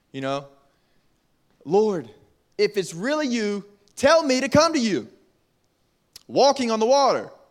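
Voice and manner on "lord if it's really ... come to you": mild, light called-out voice. Speaker retelling how Peter called out to Jesus, retelling a shout. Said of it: "He shouts".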